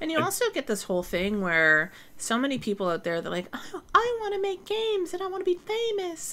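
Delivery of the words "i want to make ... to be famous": very high little cartoon squeak, slow. Quoting people who want to make games and be famous: Mickey Mouse voice. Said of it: "I always do the Mickey Mouse voice when I do that".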